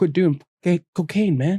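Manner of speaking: audible stage whisper. Retelling what the doctor told him in front of his mom: whisper just loud enough to hear. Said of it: "he whispers it just loud enough for my mother to hear".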